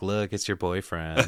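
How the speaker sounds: ordinary talk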